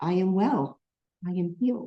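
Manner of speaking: frail, faint, very weak, feeble little voice. The speaker retells what a sick boy said on seeing them: imitating a very weak voice. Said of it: "in this very weak voice".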